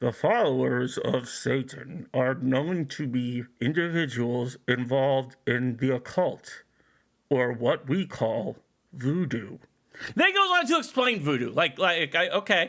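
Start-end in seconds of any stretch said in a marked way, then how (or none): 0.0-9.6 very low, slow narrator voice.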